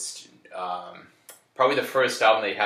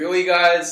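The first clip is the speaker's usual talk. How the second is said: play-acted exasperated, very high, very loud, shrill outburst; 10 semitones higher, 9 dB louder than usual. Speaker recounting someone getting injured in the pit, imitating Tommy being pissed. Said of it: "Tommy was kind of pissed".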